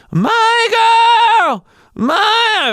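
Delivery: very high, cracking voice breaking apart, dying-goat bleat. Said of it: "I kinda sound like a dying goat".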